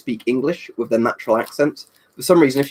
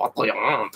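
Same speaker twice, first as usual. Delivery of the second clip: put-on French accent; 5 dB quieter than usual. Answering a viewer's request with a put-on French accent. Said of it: "French accent again".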